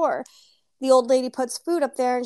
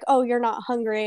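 mock-taunting, put-on taunting woman voice. Retelling how a woman taunted someone over their food, mock-taunting. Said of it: "the woman is just kind of taunting her".

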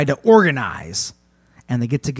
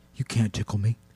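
suddenly soft, quiet voice; 4 semitones lower, 6 dB quieter than usual. Voicing a tickler who stops laughing and speaks: suddenly quiet voice. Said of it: "really gets quiet".

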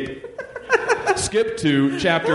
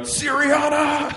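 high, stretched, drawn-out mock scream. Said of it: "dunk and scream out".

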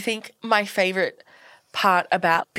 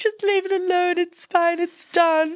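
put-on weeping, very high-pitched, slow and drawn out; 10 semitones higher than usual. Recounting a ruined wedding and quoting the bride, imitating a crying bride. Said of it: "she was crying".

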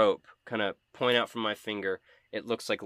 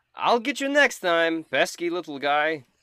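in-character, high, loud, drawn-out battle yell; 8 semitones higher, 6 dB louder than usual. Yelling at a foe as a bonus action in a fight: yelling in character. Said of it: "I'm gonna yell".

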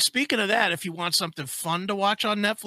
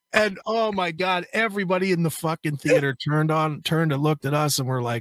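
ordinary talk

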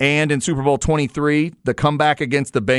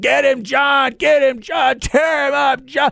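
put-on high, rough, wild madman screaming; 10 semitones higher than usual. Retelling cheering in a sports bar: retelling screaming like a madman. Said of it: "I'm screaming like a madman".

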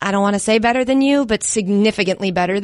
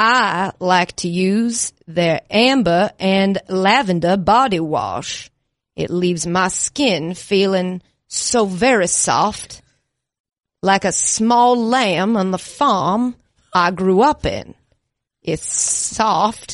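put-on southern gentleman voice; 3 semitones lower than usual. Reading a sponsor ad on the show in a Foghorn Leghorn-style Southern gentleman voice. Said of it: "tried like a Southern gentleman".

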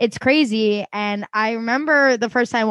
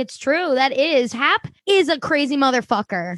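ordinary delivery

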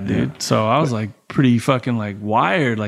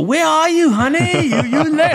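put-on, high-pitched Thai accent; 4 dB louder than usual. Retelling his wife calling him late at night, imitating her thai accent. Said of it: "That fucking accent's great".

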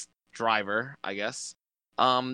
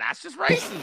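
high-pitched screamed protest. Imagining the reaction to a last-lap punt: imitating Dale Junior screaming. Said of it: "Dale Junior will be screaming".

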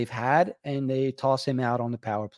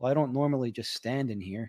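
put-on serious voice, quieter and faster; 6 dB quieter than usual. Retell how Paul answered you when you found him in line, imitating Paul Holmgren being most serious. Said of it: "he said it in the most serious way".

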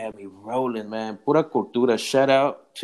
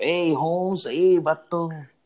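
put-on street talk, higher; 5 semitones higher than usual. Talking about people whose lingo they love, imitating their street talk. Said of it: "the way they talk is still".

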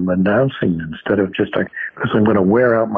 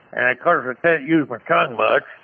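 muffled, blurred, mumbled words, tongue held down; 4 semitones higher than usual. Demonstrating articulation while holding a pen in the mouth: muffled speech. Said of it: "I'm going to put a pen in my mouth".

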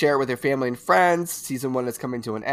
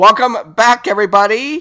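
very loud, high, thrilled, excited screaming; 8 semitones higher, 11 dB louder than usual. Welcoming listeners back at the start of the episode: screaming the welcome. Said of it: "you screaming, boy, you screaming".

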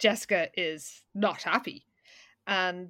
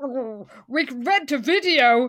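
mock mouth-full speech, higher and louder; 5 semitones higher, 6 dB louder than usual. Retelling a book scene, quoting Todd: imitating talking with mouth full. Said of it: "Todd says with his mouthful".

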